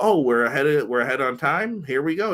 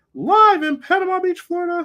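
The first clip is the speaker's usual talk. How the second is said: put-on wrestling announcer voice, higher and louder; 5 dB louder than usual. Opening a wrestling broadcast as an announcer: Tony Schiavone impression. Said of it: "that's my Tony Schiavone impression".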